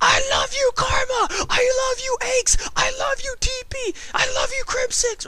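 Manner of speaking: mock very high, loud, adoring fanatic scream.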